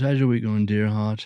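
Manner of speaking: imitated bad put-on English accent. Retelling what the man at an audition asked him, in a bad english accent. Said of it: "It's a bad English accent".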